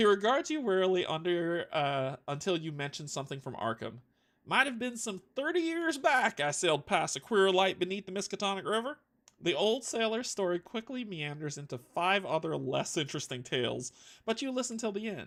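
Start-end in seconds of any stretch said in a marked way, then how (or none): 4.5-9.0 put-on country accent, higher and louder. Narrator voicing an old sailor telling his tale, country accent. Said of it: "I do a country accent really well".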